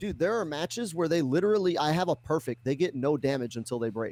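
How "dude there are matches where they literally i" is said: plain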